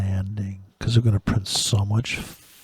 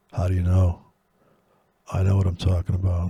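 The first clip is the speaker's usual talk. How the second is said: put-on deep voice, much lower than normal; 3 semitones lower than usual. In the middle of talking about Miss Theranos, speak in a put-on deep voice. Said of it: "I'm talking a deep voice".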